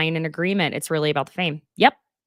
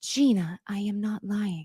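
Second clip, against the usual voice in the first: calm, soft, slow commentator voice; 8 semitones higher, 6 dB louder than usual. Retelling a fight, [name] answers Gina, who is yelling at her, calm Golf Channel voice impression. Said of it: "like Golf Channel voice".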